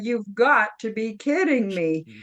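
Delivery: normal talking voice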